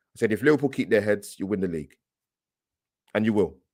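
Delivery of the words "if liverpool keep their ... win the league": ordinary delivery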